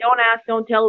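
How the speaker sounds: ordinary talk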